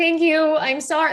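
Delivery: high-pitched, tearful, bawling, openly crying through words. Retelling thanking a mother who grabbed the running child, acting out bawling. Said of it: "So now I'm bawling and I'm like".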